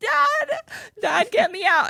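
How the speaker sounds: play-acted very high, drawn-out tearful crying. Retelling begging dad to get out of goal: imitating own past crying. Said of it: "tears streaming down my face, crying".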